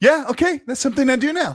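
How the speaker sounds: high, mocking heroine-style voice.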